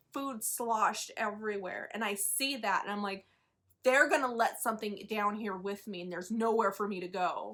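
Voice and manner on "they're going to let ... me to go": ordinary talk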